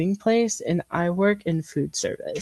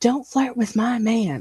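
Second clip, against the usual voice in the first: high, half-strength scream; 5 semitones higher than usual. Retelling a drive-thru customer's attack: imitating a woman screaming. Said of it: "she was screaming".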